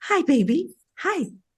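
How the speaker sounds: put-on cooing baby-talk voice, very high. Explaining how we talk to babies, greeting a baby in soft baby-talk voice. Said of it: "how we adjust our voices to speak to babies".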